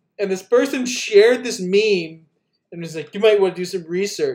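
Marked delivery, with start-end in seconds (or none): 3.1-4.4 mock smug tone, faster. Retelling what a person said after sharing a meme, imitating a smug tone. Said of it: "like super smugly".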